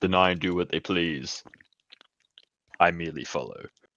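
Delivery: put-on, strained, deep voice. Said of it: "I'm trying to do a deep voice and it hurts".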